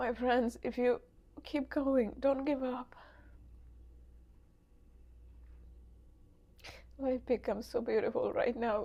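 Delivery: crying, tearful, emotional voice. Sharing raw emotion with friends who may be struggling, crying while speaking. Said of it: "The reason I'm crying".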